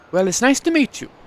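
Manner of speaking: put-on Welsh accent. Narrator voicing a woman greeting the player's character, in a Welsh accent. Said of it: "I'm giving her a Welsh accent".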